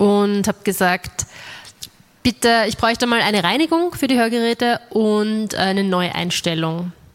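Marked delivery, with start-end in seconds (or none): none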